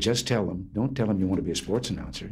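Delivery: ordinary delivery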